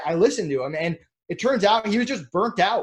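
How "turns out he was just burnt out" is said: ordinary talk, nothing marked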